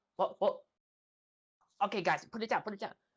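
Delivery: bossy, high-pitched goblin boss voice. Voicing a goblin boss bossing goblins carrying a bed frame: bossy goblin boss voice. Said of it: "bossing around other goblins".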